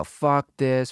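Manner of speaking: ordinary delivery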